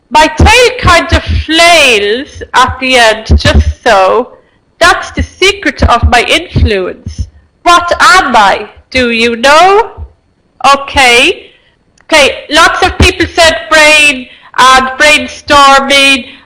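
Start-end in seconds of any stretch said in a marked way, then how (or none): 0.1-10.0 slow, careful reading. Rereading a riddle aloud to your audience, reading slowly. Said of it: "I will read it again slowly".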